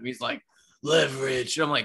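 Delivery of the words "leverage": growling superhero voice. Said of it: "Why do you sound like this".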